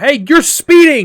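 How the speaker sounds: high, loud, slow shouting. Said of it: "you guys hear a police officer shout".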